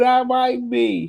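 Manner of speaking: slow, high-pitched, drawn-out evasive tone.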